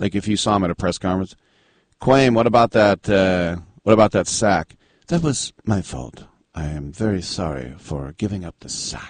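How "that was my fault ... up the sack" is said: put-on gentle voice, lower and much quieter. Acting out a player answering at a press conference, imitating Quame's very gentle voice. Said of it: "he had this very gentle voice".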